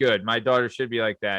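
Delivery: ordinary delivery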